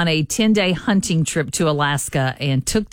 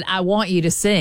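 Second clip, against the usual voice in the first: ordinary talk, nothing marked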